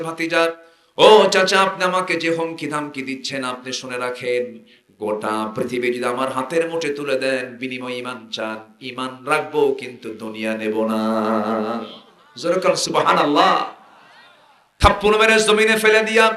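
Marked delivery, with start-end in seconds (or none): none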